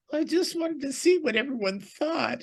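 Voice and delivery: high-pitched, mocking, mock-innocent voice.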